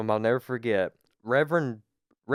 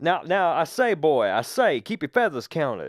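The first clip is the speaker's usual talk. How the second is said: booming cartoon rooster voice, swinging up and down; 5 semitones higher than usual. Describing an old teacher whose voice booms over the crowd, Foghorn Leghorn voice. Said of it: "It kind of sounds like Foghorn Leghorn".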